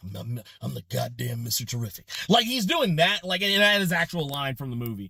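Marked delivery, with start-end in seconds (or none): 0.2-2.1 put-on gruff voice, lower and quieter. Describing how an actor delivers a movie line, gruff Mister Terrific voice. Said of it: "he's putting some gruff".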